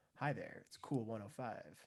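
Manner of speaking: very soft, low, hushed late-night DJ voice. Showing how a seller's voice might come across to a buyer, in a late-night radio dj voice. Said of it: "the late night radio D J voice".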